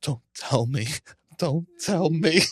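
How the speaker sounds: crying, tearful voice. Retelling hearing the phone ring as a child: retelling own crying plea. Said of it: "And I just start crying. I go".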